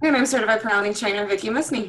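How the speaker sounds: rushed, said really fast. Introducing herself on the podcast right after her co-host, said really fast. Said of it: "You really rolled that together really fast".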